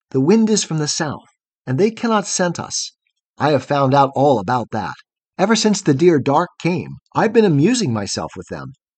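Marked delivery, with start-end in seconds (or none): none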